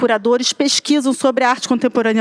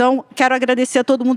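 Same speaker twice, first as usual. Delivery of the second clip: hurried, fast, rattled-off delivery. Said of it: "tenho que falar tudo muito rápido".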